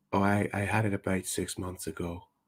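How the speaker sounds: very hushed, very low, soft, gentle voice. Retelling a woman's answer to a man's question, imitating a very soft, gentle voice. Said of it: "she had one of those very gentle voices now, very very soft".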